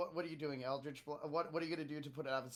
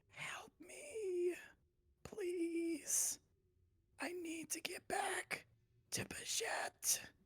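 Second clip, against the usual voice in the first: faint, feeble, breathy whispered goblin voice; 4 dB quieter than usual. Game master voices a goblin calling up from a crevice, in a weak, faint goblin voice. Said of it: "weakly saying".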